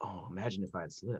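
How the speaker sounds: menacing, threatening whisper. Voicing a character threatening a captive at blaster point: menacing whisper. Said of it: "he kind of whispers at him".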